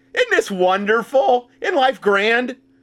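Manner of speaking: high, sarcastic mock cheer. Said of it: "Obviously, I'm being sarcastic".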